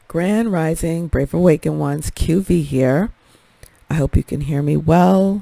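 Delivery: quiet, gentle, hushed delivery. Greeting viewers at the start of a video on a new mic, speaking very softly. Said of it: "I am speaking very softly".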